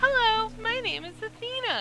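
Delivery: high-pitched voice. Suggesting a voice for the character Ursa, in a high-pitched voice. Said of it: "try a high pitched tone".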